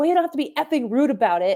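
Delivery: loud, acted-out, protesting yell. Retelling a friend yelling back at a rude lady: imitating Josh yelling. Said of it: "my friend Josh yelled at her".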